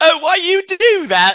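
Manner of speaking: shrill, squeaky, loud, put-on English accent. Retelling a story where a woman is tripped, in a Piggy Sam English accent. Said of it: "is this in England?".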